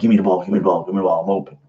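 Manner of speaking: mock bratty, petulant, demanding nagging, repeated. Imitating a selfish running back demanding the ball: imitating a petulant player. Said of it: "a petulant little asshole running back".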